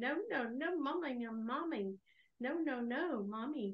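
slow, drawn-out talking-dog voice. Retelling how her dog sounds when it licks her nose: imitating a dog saying no mommy. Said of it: "it sounds like she's saying".

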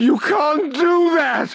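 very high, breaking, cracked cry of terror. Narrating a man crying out to O'Brien over the cage, high, cracked voice. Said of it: "He cried out in a high, cracked voice".

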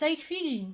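very loud, high-pitched shrieking holler. Narrator reads a story line where a character orders someone to go: yelling. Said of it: "Wrzasnął pan Wrona".

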